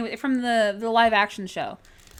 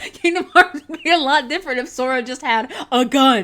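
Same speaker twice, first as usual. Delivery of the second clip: loud, laughing and giggling through the words; 4 semitones higher, 7 dB louder than usual. Looking through old drawings and joking, laughing while talking. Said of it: "I'm making myself laugh".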